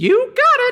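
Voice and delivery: shrill, squeaky, very high and loud yelp. Voicing the creature accepting a command: Mr. Meeseeks voice. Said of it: "as the Meeseek says".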